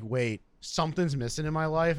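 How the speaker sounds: plain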